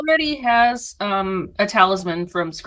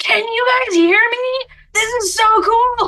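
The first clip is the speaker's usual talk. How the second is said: very high, loudest-possible, drawn-out shout; 14 semitones higher, 4 dB louder than usual. Predicting what Scratch will say on trying one: imitating Scratch shouting in loudest possible voice. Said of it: "in the loudest possible voice".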